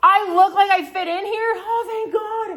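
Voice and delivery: very high, loud, drawn-out acted drunk gushing. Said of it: "'cause I'm drunk".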